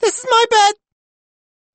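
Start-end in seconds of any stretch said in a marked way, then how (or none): 0.0-0.7 put-on very high, loud little boy voice. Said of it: "the voice explains".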